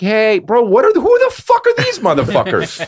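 high, swooping put-on girly voice, all over the place. Imagining how an audience would react: imitating a girl. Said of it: "And chicks would be like".

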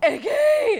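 frantic, very high, loud panicked scream. Retelling running into the yard after her dog got out: imitating her own panicked yell. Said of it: "and I was panicked".

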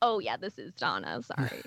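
animated, sing-song motherly voice, swooping. Retelling answering a delivery call as the mom: imitating Donna. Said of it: "You do an impression of your mom".

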